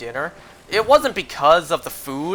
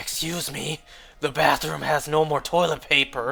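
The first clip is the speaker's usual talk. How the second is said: faint, quiet, hoarse, raspy sick-sounding croak; 4 dB quieter than usual. Speaker retells asking a worker for help while sick: recreating a quiet raspy sick voice. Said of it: "very quiet, raspy voice".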